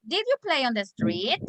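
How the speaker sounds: rising pitch on "street". Teaching yes-no question intonation with an example: rising pitch at the end. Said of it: "when you have a yes, no question, the intonation is raising".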